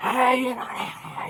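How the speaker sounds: slow, drawn-out coach-style calling voice. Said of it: "he's yelling at the runner on second".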